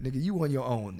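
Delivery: plain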